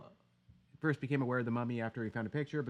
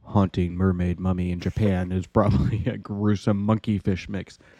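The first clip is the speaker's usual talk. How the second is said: ominous, foreboding, deep, booming, very loud voice; 5 semitones lower, 13 dB louder than usual. Asked by the other speaker to read a headline, in an ominous voice. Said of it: "You got to read it in an ominous voice".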